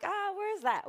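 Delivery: high, puzzled tone. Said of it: "people are like".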